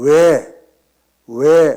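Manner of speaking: loud, called-out "wae".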